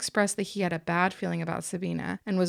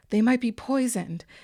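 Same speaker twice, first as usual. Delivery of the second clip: put-on panicked, urgent tone; 4 semitones higher, 4 dB louder than usual. Retelling a woman snatching cigarettes from men: imitating a panicked voice. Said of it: "say in a panicked voice".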